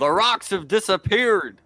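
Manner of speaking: very high, loud, booming shout. Playing a character in a story game, the speaker calls out a line: shouting. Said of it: "I'm gonna shout".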